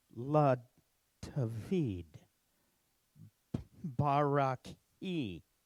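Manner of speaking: nice and slow, each letter carefully sounded out. Guiding listeners to sound out the letters of each word: slow, careful sounding out. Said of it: "we're going to go nice and slow".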